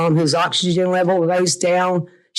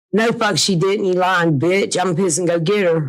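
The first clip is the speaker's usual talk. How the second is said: plain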